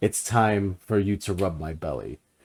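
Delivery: royal, regal voice. Imitating a corgi king character asking for belly rubs: royal voice. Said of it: "He just says it, like, royally".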